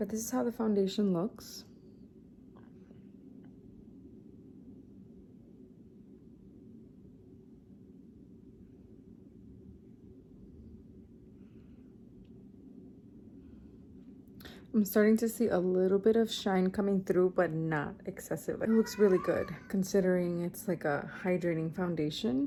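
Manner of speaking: whispered, barely voiced, soft and hushed. Speaker talking to viewers, trying not to wake a child just put down: whispering. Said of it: "I'm whispering because I just put Lucas down".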